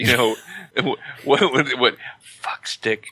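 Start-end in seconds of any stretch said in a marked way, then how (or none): 2.2-3.1 quiet whispered words. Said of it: "the way he whispers".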